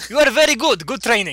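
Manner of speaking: put-on Transylvanian accent. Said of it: "became Transylvanian when you switched back to English".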